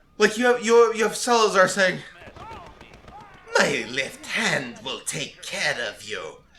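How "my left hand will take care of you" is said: low, puny, self-satisfied villain voice. Describing a scene, quoting Salazar's line to Leon, in a squeaky Salazar voice. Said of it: "this squeaky voiced Napoleon".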